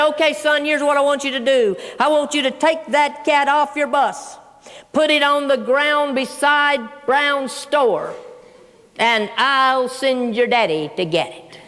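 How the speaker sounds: ordinary talk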